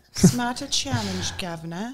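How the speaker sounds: put-on British accent. Trying out how a british woman would say a phrase, in a british accent. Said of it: "How would the British chick say it?".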